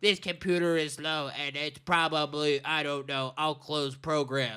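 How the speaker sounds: put-on soft, elderly old-grandma voice. Telling a story about grandma coming over, imitating grandma's voice. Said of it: "That's my grandma's voice".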